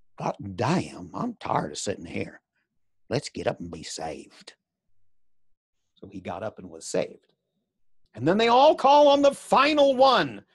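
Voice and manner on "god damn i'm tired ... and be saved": whispered, much quieter and lower. In a hot, crowded church, a boy speaks to the narrator: whispering. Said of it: "Wesley said to me in a whisper".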